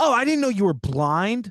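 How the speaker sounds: put-on rude, dismissive tone. Retelling a flight, the speaker quotes a stewardess who saw their cane, mock-rude tone. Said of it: "in a real rude manner".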